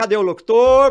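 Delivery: very loud, high, teasing, jeering, mocking tone. Retelling how a colleague barged in mocking the speaker's wish to be an announcer, retelling a mocking taunt. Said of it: "E ele entrava lá zoando".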